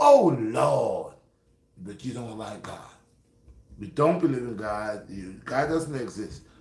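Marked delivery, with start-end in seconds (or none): 0.0-1.1 very loud screaming cry of pain. Describing what happens when something heavy drops on your toe: imitating someone screaming. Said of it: "how you screaming".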